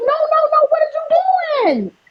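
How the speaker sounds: shrill, very high scream, "you" drawn out. Retelling screaming at the phone: imitating own past screaming. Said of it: "I was screaming at the phone like".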